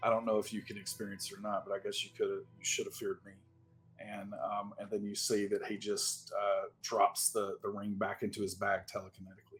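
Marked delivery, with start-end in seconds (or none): 0.0-3.3 soft mutter under the breath. Voicing a character speaking to a husk: muttered under his breath. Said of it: "kind of under his breath".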